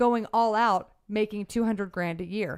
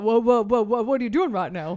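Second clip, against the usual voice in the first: put-on cartoon rooster voice, louder; 5 dB louder than usual. Showing how Foghorn Leghorn would say the line: Foghorn Leghorn voice. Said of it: "How would he say it?".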